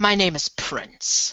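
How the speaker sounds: put-on speaking with an Irish accent. Role-playing a scene with a talking cat, a character gives their name in an Irish accent. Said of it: "Irish accent".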